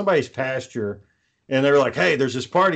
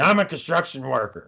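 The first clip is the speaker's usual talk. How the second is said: put-on slurred, drunken-sounding speech. Retelling saying words drunk at a car window: imitating own drunk slurring. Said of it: "I'm slurring my words and shit".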